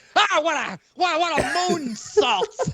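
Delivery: high, slow, drawn-out ringside wrestling announcer voice. Imitating an announcer calling a wrestling move: Vince McMahon announcing. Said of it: "Vince wasn't a bad announcer".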